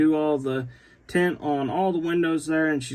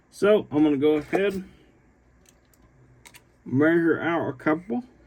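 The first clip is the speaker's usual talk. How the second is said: speaking around a pen held in mouth. Measuring out drive shafts, talking with a Sharpie in his mouth. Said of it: "I got the Sharpie in my mouth".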